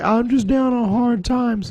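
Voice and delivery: acted, high, weepy, tearful pleading voice. Retelling what a woman said at a radio station: imitating someone crying. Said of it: "she's crying".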